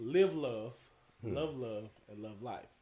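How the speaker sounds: slow, deliberate, each word laid out carefully. Asked to repeat a friend's teenage motto for the audience: said again slowly. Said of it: "Can you say it again slow".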